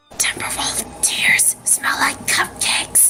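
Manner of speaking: hushed, quiet whisper. Telling the group to stay quiet and listen closely, then whispered. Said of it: "I'm going to whisper it".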